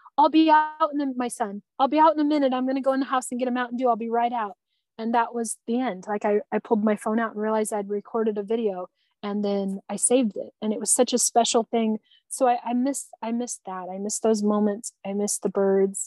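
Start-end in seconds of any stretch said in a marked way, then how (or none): 0.2-4.6 put-on light, casual calling-out yell. Retelling a father calling back to his son: imitating someone yelling. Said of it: "he yells back to Jackson".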